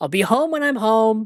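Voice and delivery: shouting. Retelling how a film character yells at his wife on the phone: imitating someone yelling. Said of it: "he yells at his wife".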